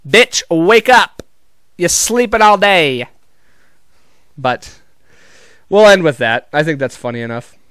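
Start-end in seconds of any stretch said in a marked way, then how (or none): 0.1-3.0 slow, drawn-out, deliberate stand-up comedian delivery. Imagining the prince waking Sleeping Beauty: Katt Williams voice. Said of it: "I wanted to do Cat Williams doing Sleeping Beauty".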